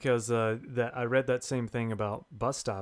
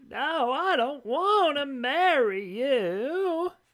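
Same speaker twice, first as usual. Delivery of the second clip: very high, very slow, fake Southern accent; 5 dB louder than usual. Giving listeners a preview of the accent: bad southern accent. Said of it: "here's a preview of the accent".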